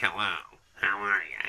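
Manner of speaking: very deep, very low, slow, dragged-out character voice. Showing a viewer in the chat the Squidward voice. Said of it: "have you ever heard the Squidward voice?".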